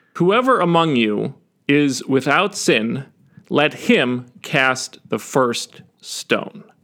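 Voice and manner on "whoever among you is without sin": plain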